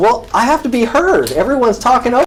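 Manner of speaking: shouting. A man on tape, cut off repeatedly, answers back while yelling. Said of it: "There's no need to yell".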